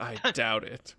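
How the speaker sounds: mumbled sotto voce, under-the-breath mutter. Voicing a character's reply to a player: muttering under his breath. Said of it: "under his breath".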